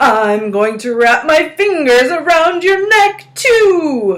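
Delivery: loud, high, eerie ghost howl, overly drawn out. [name], pretending to be a ghost, tries to scare Nancy: spooky howling ghost voice. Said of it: "she howled in her spooky voice".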